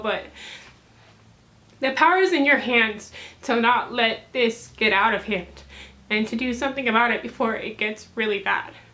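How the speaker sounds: emotional, heartfelt, speaking while welling up. Speaker addressing viewers of a video, getting emotional. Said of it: "I'm getting emotional".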